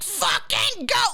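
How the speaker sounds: play-acted, very high-pitched, fed-up, impatient yell. Retelling driving behind a car at the speed limit: imitating own impatient yell at a driver. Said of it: "it's not fast enough for me".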